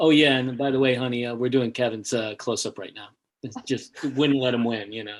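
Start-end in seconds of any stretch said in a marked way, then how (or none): 0.0-3.1 dry, flat, matter-of-fact deadpan delivery. Retelling what was said to a wife on the phone: retelling a deadpan line. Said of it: "I just deadpan said".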